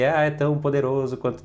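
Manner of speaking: acted crying. Retelling what a woman said while crying: imitating someone crying. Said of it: "ela chorando assim".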